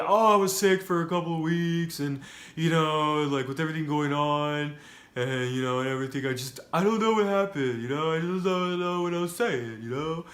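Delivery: horrible, rambling put-on voice. Paraphrasing what Kurt claimed, the speaker does a horrible Kurt Angle impersonation. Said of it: "That's a horrible impersonation".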